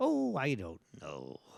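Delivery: very soft, very slow, hushed, drawn-out quiet voice. Show the offstage version that you say you do better, a quiet offstage Gilbert impression. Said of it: "Just quiet Gilbert".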